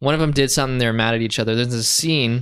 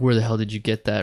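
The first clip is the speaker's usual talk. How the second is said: ordinary delivery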